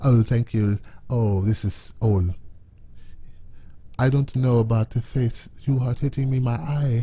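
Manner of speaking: put-on English accent, soft and low. Retelling what a woman said to a man, in an english accent. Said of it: "She has this English accent. She's like".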